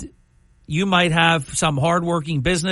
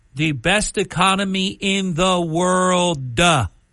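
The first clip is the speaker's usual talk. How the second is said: play-acted, very slow, exaggerated duh ending. Imitating a man who ends every word in D with "duh", mocking the added "duh" ending. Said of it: "Everything that ends in a D... he ended that with duh".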